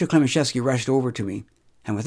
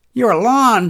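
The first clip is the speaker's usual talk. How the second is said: very high, shrill, loud shouting; 9 semitones higher, 6 dB louder than usual. Reading a woman's retort to the man standing over them: shouted. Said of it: "shouted Lily".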